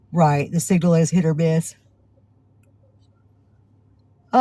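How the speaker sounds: words spoken through a yawn. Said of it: "I'm so sorry I'm yawning".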